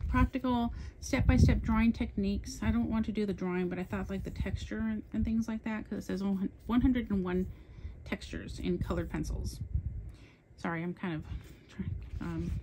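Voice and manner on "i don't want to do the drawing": rushed, fast-paced chatter, talking too fast. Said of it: "talking too fast".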